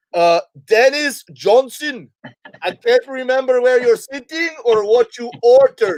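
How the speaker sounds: put-on high, slow, thick Caribbean accent. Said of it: "this thick Caribbean accent".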